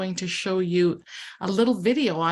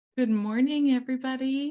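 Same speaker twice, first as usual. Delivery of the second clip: easy, relaxed, pitched-up tone; 6 semitones higher than usual. Greeting everybody early while some may still be sleeping, talking quietly. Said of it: "I'm talking quietly".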